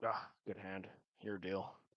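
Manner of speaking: very hushed, low muttering to oneself. Narrating two guards at a card game muttering to themselves: very quiet muttering. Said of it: "very quietly saying to themselves like".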